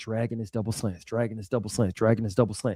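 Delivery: very quiet, low, running mumble under the breath. Retelling how Nnamdi walked by ignoring him: imitating Nnamdi muttering under his breath. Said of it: "saying stuff under his breath".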